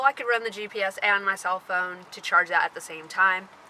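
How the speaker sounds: plain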